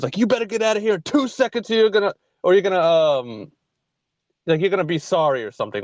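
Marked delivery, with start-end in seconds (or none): 0.2-2.8 mock menacing, mildly threatening, half-yelled. Retelling a restaurant manager threatening a man, re-enacting a screamed threat. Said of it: "everything he was screaming".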